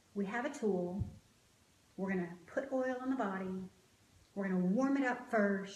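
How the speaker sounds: plain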